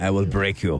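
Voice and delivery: low put-on Russian fighter voice. Joining in on a Russian basketball player's taunt: Ivan Drago voice. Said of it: "Ivan Drago".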